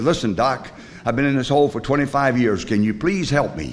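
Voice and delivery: ordinary talk, nothing marked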